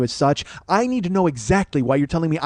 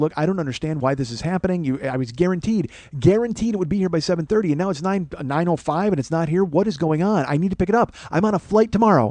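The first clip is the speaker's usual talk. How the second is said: ordinary delivery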